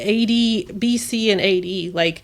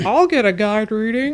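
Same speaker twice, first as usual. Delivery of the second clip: openly sarcastic, mocking tone meant to be heard. Rolling eyes in person, wanting the sarcasm heard: sarcastic tone. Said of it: "Just to make sure you hear the sarcasm in my voice".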